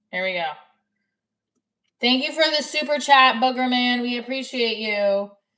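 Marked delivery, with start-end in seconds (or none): 2.0-5.3 yelling, higher and louder. A streamer thanks a viewer for a super chat; yelling. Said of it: "I don't know why I'm yelling".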